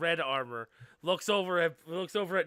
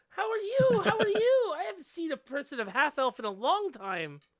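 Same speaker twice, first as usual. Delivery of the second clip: put-on very high, sing-song, swooping little-girl voice; 13 semitones higher than usual. Voicing a little half-elf girl greeting a half-elf player: voicing a little half-elf girl. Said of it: "She's like".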